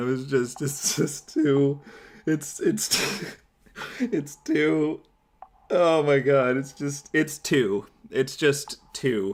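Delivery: slow, helpless giggling fit, words falling apart. Trying to finish the video but unable to continue: breaking down laughing. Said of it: "I didn't mean to break down".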